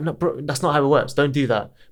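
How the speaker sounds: ordinary talk, nothing marked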